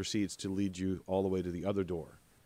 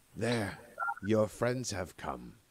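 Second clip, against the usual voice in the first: rough, growling, rasping reptilian creature voice. Game master voicing a reptilian creature speaking in Common, rough, growly reptilian voice. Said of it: "rough, growly, reptilian voice speaks in common".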